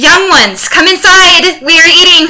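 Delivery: shrill, very high, full-volume yelling. Asked to get the boys in to eat, the speaker: retelling a yell to the kids. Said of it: "And so I yell".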